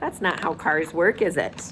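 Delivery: plain reading voice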